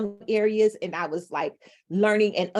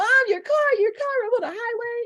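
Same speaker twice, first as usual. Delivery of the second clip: put-on very high, fast, tearful, panicked blurting. Retelling a panicked phone call to mom, imitating own past panicked crying. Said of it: "I am crying".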